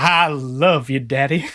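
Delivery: very low, slow, drawn-out adoring, loving delivery. A game narrator voices a character hugging the player, loving. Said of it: "Filled with so much love".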